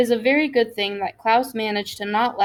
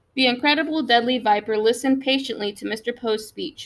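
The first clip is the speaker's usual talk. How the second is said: ordinary delivery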